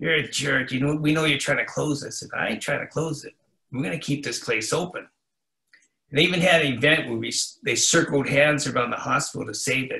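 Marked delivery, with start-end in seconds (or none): 0.0-2.2 mock muttering, mumbled under breath. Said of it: "they'll bumble under their breath".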